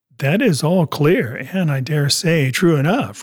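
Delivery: ordinary delivery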